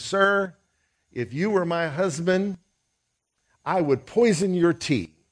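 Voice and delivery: indignant, angry woman. Retelling a lady confronting Charles Spurgeon: imitating an angry lady. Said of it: "confronted by an angry lady".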